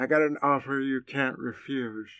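slow, soft, muffled stuffed-cheeks mumble. Asked to do the voice for listeners: muffled cotton-in-mouth voice. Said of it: "he had like the cotton balls in his mouth".

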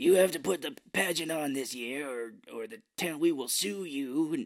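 rasping, scratchy, raspy voice. Retelling what Mr. Blackthorn said to a man before the town council: imitating Mr. Blackthorn's raspy voice. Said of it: "he has this really raspy voice too".

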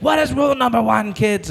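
shrill, high, barking drill-sergeant yell. Retelling how a woman addressed kids like a drill sergeant, imitating someone yelling. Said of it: "she was like yelling like".

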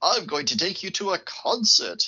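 plummy upper-class British voice. Quoting a stiff, posh boss from a film: posh upper-class British voice as Dalby. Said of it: "very upper class Brits".

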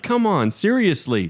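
high, play-acted shouting. Recalling the ending of a movie watched with his wife, retell yelling at the screen. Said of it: "yelling at the movie".

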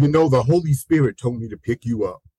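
ordinary talk, nothing marked

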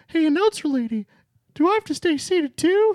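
pitched way up and spoken loudly. Retelling a ride stop where the character answers the announcer: Mickey Mouse voice. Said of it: "And then Mickey goes".

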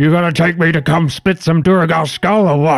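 put-on orc voice, loud. The orc barges into the room as the party returns: Fug the orc exclaiming loudly. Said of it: "barges into the room and exclaims loudly".

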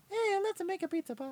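very high-pitched, loud cartoon voice. Retelling how Mario's original voice actor came in, quoting him in Mario voice. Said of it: "I got the original voice of Mario".

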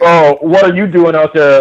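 put-on rude, condescending voice. Retelling a phone call with a highway patrol cop: imitating a rude cop. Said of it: "by the tone of his voice, is a total dickhead".

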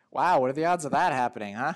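nonchalant, casual. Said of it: "really nonchalantly".

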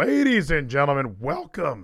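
voice cracking. Opening the show while still sick, voice cracking. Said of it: "Cracked again".

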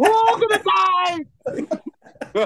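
high, very slow laughing yell. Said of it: "weren't you yelling".

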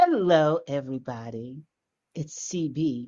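low, slow, sultry and seductive sexy voice. A host greets everybody at the start of the show in a sexy voice. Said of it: "I'm using my sexy voice today".

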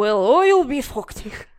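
very loud, bad, fake Irish accent. Trying an Irish line while admitting not knowing the accent; bad Irish accent. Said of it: "I don't know how to do an Irish accent".

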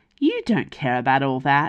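dismissive, swooping brush-off tone. Yana answers Icarus's question about the tavern: dismissively. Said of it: "Yana said dismissively".

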